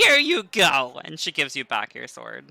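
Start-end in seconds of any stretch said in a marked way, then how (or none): 0.0-1.0 loud, high cackling laugh through the words. A narrator voicing a woman handing back a sword, cackling laugh. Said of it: "she kind of just gives a cackling laugh".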